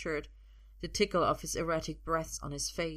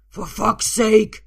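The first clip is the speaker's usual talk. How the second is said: very loud, high, explosive outburst; 5 semitones higher, 17 dB louder than usual. [name] lunges at Arthur, who is clutching the keys, exploding in an outburst. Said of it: "[name] explodes".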